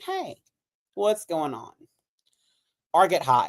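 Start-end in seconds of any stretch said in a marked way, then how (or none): 0.0-1.7 drowsy, sleepy, half-awake just-woke-up voice. Showing how they sound after waking from a nap: mock-sleepy voice. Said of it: "wake up from a nap and I'm still kind of feeling sleepy".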